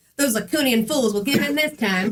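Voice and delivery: put-on old-time newsreel announcing style. Reading a story scene aloud and voicing Dave: Dave voice, 1920s newscaster style. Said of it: "the nineteen twenties newscast?".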